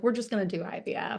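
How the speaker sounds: offhand, flippant delivery. Retelling own past answer to a priest about having kids: imitating own flippant tone. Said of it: "I said it very flippantly".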